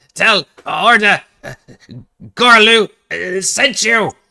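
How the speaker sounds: high, loud, gleeful, unhinged cackling delivery. Narrating a fight, an enemy speaks after landing a hit, cackling with insane glee. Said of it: "he cackles with insane glee and says".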